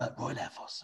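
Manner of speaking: soft, voiceless whispered voice. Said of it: "somebody had to whisper in his ear".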